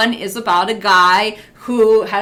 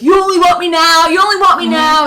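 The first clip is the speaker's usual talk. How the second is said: high, loud, angry screaming, over and over; 8 semitones higher, 5 dB louder than usual. Retelling a movie scene where Rocky yells at Mickey: imitating Rocky screaming. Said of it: "and he's screaming".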